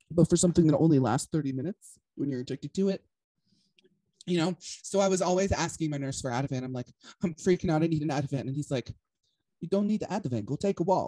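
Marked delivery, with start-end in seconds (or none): 9.6-11.1 put-on Polish accent. Retelling what a nurse said when asked for Ativan, put-on Polish accent. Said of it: "I don't know what a Polish accent".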